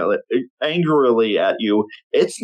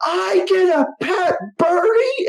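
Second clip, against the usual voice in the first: put-on full-lung child's scream, very high, slow and drawn-out. A dryad girl calls back from the distance, screaming at the top of lungs. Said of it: "she screams at the top of her lungs".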